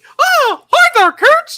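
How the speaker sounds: squeaky cartoon-mouse voice. Voicing a character for the group, greeting Kurtz in a Mickey Mouse voice. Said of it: "but you sound like Mickey Mouse".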